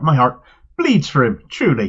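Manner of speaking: low, derisive, mocking sarcasm with false sympathy. Video host on a health minister's rotten start to the year, in a mocking tone. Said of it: "the mocking tone of my voice".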